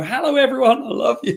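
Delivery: shrill, very high shout. Stuck in traffic, retelling a woman yelling out a car window, retelling someone yelling. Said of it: "she's yelling out the window".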